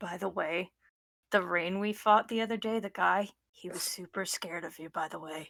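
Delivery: hushed, secretive half-whisper. Voicing a character who half-whispers into another character's ear: half-whispering in character. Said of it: "I'll whisper into Win-, into Seabreeze's ear".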